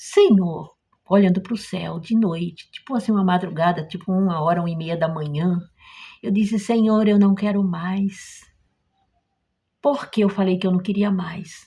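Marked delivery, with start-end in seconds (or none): 6.6-8.4 put-on very gentle, meek, mild voice, slower. Recounting what they said to the Lord at night, retelling own very gentle voice. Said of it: "eu disse com aquela voz bem mansa".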